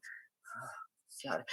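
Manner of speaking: nervous muttering. Narrating a game scene, speaker plays a seated character seeing a player arrive, nervous muttering. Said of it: "He's like kind of like nervously like sitting in his seat".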